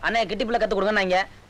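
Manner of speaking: ordinary delivery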